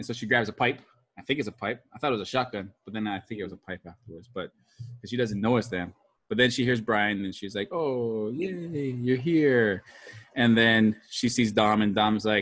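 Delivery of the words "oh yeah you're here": every word stretched out very slowly. Recapping a movie scene with Brian and Dom, doing a Mia impression. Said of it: "That's a very good Mia impersonation".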